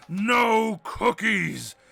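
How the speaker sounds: hammy, over-the-top, swooping storybook dragon voice. Voicing a character who hams it up as a dragon: hammy dragon voice.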